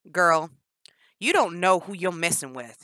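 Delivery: booming, very loud shout. [name] answers Jennifer after she mocks his twang, yelling. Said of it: "[name] yelled".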